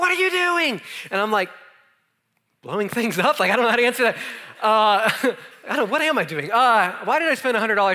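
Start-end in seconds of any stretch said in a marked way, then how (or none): 0.0-0.8 mock, shrill, high scream at top of lungs. Recounting a twin sister running out at the speaker, imitating screaming at top of lungs. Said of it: "she's like screaming at me at the top of her lungs".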